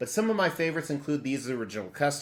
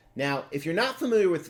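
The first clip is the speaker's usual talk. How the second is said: breaking, cracking voice, cracking mid-phrase; 4 semitones higher, 4 dB louder than usual. A YouTuber introducing today's topic on his channel, voice cracking. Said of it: "my voice just cracked".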